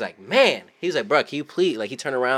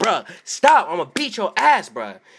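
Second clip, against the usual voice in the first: put-on high, loud yell; 6 semitones higher, 6 dB louder than usual. Retelling a father yelling at his kid for kicking a seat, retelling a father yelling. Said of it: "he yells at his kid".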